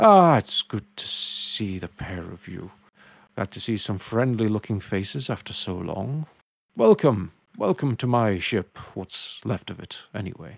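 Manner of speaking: thin, tinny voice like a small dome speaker. Voicing a weird little dome device for the two players, in a tinny speaker voice. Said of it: "a weird little dome thing that is very tinny".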